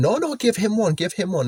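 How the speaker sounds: mock giggling, coaxing plea. Retelling how Steph urged a man to give him one, imitating Steph's giggly pleading. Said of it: "It's all giggly and that".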